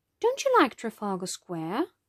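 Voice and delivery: ordinary talk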